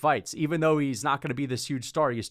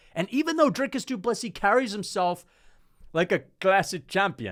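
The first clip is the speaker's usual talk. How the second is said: attempted South African accent, pitched up; 6 semitones higher than usual. Describing a fighter's classy manner, in a put-on south african accent. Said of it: "I'm trying to be South African with my accent there".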